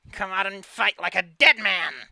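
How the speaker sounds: very loud yell from a small voice. Narrator voices him shouting at you for hiding, yelling in a small voice. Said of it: "yells at you in a in a small voice because he is small".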